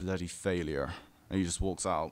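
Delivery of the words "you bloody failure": gruff, gritty, dead-serious, dismissive put-down tone. Retelling what an angry man said after staring: imitating a gritty serious voice. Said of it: "serious voice".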